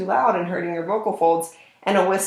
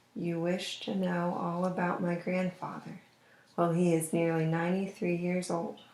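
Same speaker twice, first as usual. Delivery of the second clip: hushed, confidential, very quiet half-whisper; 10 dB quieter than usual. Demonstrating a passage for the other person to try, between whisper and normal volume. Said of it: "it might sound something like this".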